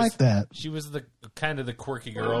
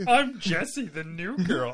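fake quirky girlish voice; 7 semitones higher than usual. Joking about a quirky actress: Zooey Deschanel impression. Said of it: "Drew's impression of Zooey Deschanel".

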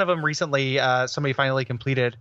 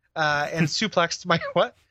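plain

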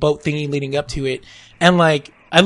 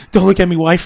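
mock teary, overwhelmed, loud, welled-up outburst; 3 semitones higher, 5 dB louder than usual. Retelling watching a movie with the wife: retelling being welled up. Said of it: "I started getting all welled up".

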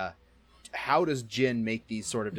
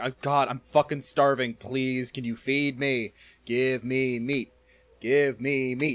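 acted goofy, pestering, silly pleading voice; 3 semitones higher, 4 dB louder than usual. Acting out a kidnapped guy in a small metal box, mock silly begging. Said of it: "He's being very silly".

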